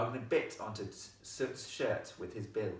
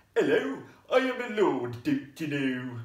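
put-on, over-the-top exaggerated posh accent; 5 semitones higher, 9 dB louder than usual. A laughing chimney sweep pretends to be a lord, exaggerated posh accent. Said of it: "began affecting what he thought sounded like a posh accent".

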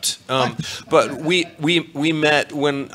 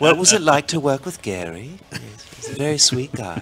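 put-on English author voice. Asked to repeat the impression, quoting a line to a new actor: Clive Barker impression. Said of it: "your Clive Barker".

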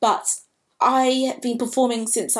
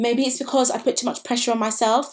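usual speaking voice

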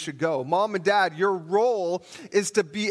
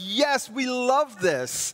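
very slow, pitched-up, fake-eager sarcastic enthusiasm; 5 semitones higher than usual. A parent mimics the kids' reaction to dishwasher chores, in sarcastic mock enthusiasm. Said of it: "I'm being very sarcastic".

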